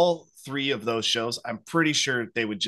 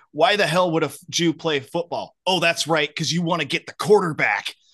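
put-on screaming, higher; 6 semitones higher, 5 dB louder than usual. Retelling a football coach yelling at a kid on his team: retelling a coach screaming. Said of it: "he's screaming and yelling at all these kids".

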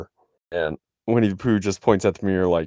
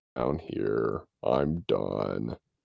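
very low, slow, creaky, drawn-out voice; 10 semitones lower, 9 dB quieter than usual. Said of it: "that low voice helped with his character".

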